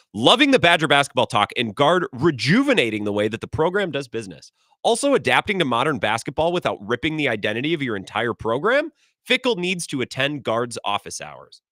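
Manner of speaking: usual speaking voice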